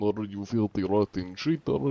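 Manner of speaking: put-on accusing tone in Russian-accented English. The anti-cheat character describes confronting cheaters, saying it in a Russian accent. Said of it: "in Russian accent".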